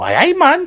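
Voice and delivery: put-on very high, very loud, shrill Geordie accent. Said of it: "a Geordie chap".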